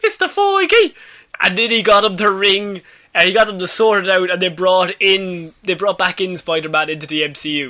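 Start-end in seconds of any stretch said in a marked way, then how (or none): 0.0-0.9 put-on crying, higher and louder. Retelling how Tom Holland rang Kevin Feige: imitating Tom Holland crying. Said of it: "crying, saying".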